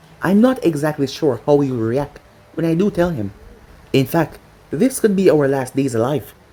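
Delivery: plain reading voice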